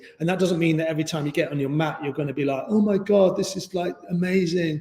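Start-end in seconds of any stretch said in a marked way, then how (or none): 2.7-4.8 put-on dreamy, blissed-out yoga-teacher tone. Acting out someone getting on their yoga mat: put-on dreamy yoga voice. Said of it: "I don't know why I do that yoga voice".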